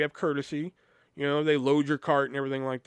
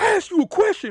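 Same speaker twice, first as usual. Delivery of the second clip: screaming, high and loud; 6 dB louder than usual. Retelling an angry customer at the register: imitating a customer screaming. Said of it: "he fucking started screaming at me".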